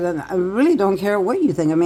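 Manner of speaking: ordinary delivery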